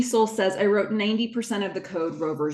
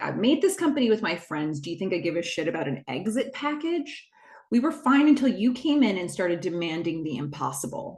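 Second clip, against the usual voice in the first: ordinary talk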